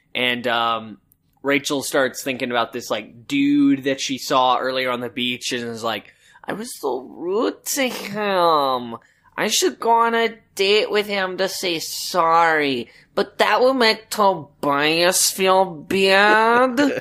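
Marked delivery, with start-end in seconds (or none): 6.5-17.0 put-on high, slow, ditzy girl voice. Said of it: "I like this voice".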